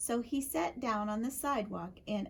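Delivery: ordinary delivery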